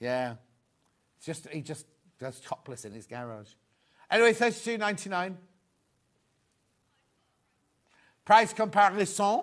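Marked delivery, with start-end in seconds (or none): 4.3-9.4 put-on, fake French accent. Reading out a price comparison: put-on French accent. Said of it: "I always do that in a French accent".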